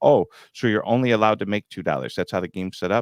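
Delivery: normal talking voice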